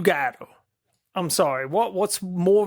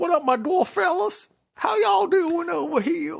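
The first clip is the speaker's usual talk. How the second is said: put-on country guy voice, very high; 11 semitones higher than usual. Joking about a movie's dwarf name, greeting them: put-on country guy voice. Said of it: "it just sounds like a countryman".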